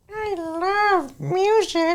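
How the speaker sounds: silly, goofy, very high put-on cartoon voice. Answering what he is passionate about, in a goofy voice. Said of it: "have said that in a goofy voice".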